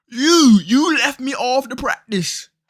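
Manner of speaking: very high-pitched, shrill, loud put-on British accent. An athlete retells what he said to the team, in a British accent. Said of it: "That was British".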